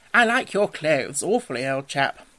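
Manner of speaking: usual speaking voice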